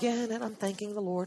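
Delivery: very quiet, hushed, barely voiced. Mimicking how someone thanks the Lord, very soft, barely said. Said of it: "It's so soft. Ooh, so soft. Barely say it".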